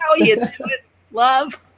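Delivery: put-on high-pitched elderly woman voice.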